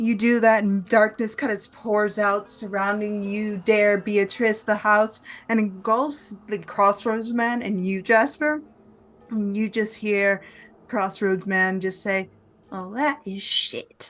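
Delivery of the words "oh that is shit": quiet, slow, annoyed grumble. Narrator voices the Crossroads Man as darkness engulfs him: quiet annoyed grumble. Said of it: "As he kind of grumbles quietly".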